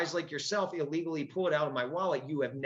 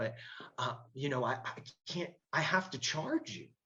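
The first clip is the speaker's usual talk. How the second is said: gentle, soft, breathy, hesitant, halting near-whispered murmur; 4 dB quieter than usual. Retelling what the officer booking him kept saying: imitating a soft-spoken man. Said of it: "real soft-spoken guy".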